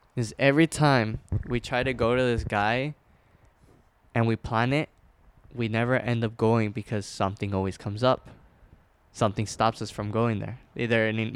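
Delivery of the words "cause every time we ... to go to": plain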